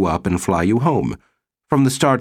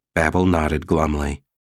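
usual speaking voice

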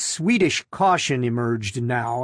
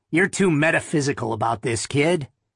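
ordinary delivery

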